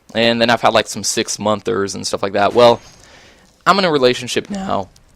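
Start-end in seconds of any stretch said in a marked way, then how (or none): 2.5-4.8 voice cracking, breaking mid-phrase. Speaker talks about his relationships, voice cracking. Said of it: "Excuse me for the voice crack".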